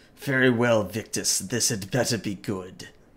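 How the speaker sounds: words growled out. Voicing Baator answering Victus over the radio: growling. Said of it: "Baator kind of growls and says".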